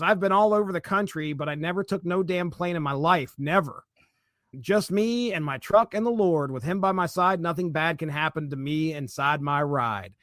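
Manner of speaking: plain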